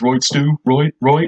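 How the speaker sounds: put-on Dublin 4 accent. Showing how a woman from that area would really talk, put-on d4 dublin accent. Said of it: "she'd actually talk a bit like this".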